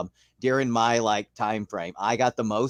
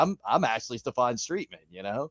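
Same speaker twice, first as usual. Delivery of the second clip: ordinary talk, nothing marked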